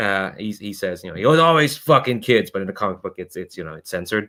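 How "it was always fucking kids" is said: contemptuous, sneering villain voice. Voicing a mobster villain confronting some kids: sneering villain voice. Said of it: "he sneers at a lot of".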